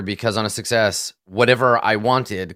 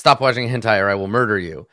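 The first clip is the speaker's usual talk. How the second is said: usual speaking voice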